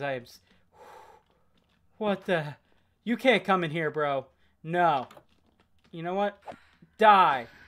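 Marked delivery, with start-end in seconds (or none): 0.0-4.3 frightened, halting, broken-off scared outburst. Talking to viewers as a creature suddenly appears in the game, scared. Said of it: "I am so scared right now".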